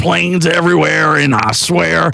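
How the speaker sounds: high, fast, ranting talk-radio voice impression.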